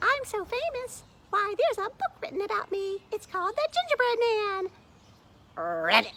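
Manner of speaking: very high, loud, swooping, sing-song boastful bragging. Reading a children's story aloud, the narrator gives a boastful Gingerbread Man voice. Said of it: "I'm [name]. / My name's [name], / Join Mrs".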